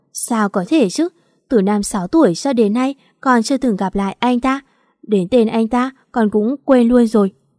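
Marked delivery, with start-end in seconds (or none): none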